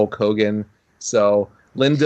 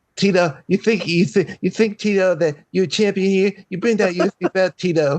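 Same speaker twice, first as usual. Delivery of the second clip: very high, taunting voice, tripping over words; 9 semitones higher than usual. Acting out Mike Tyson taunting Tito Ortiz: Mike Tyson voice. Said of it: "This is his Mike Tyson impression".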